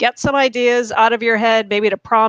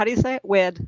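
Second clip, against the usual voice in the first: ordinary talk, nothing marked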